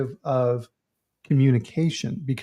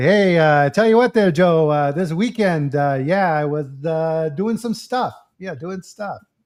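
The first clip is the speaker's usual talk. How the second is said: slow, halting ramble, drawn out, stalling on every uh; 3 semitones higher, 4 dB louder than usual. Explaining a joke-telling approach to the audience, the speaker does a Norm Macdonald impression. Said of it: "the Norm Macdonald approach there to telling a joke. Right? You can almost hear it in his voice".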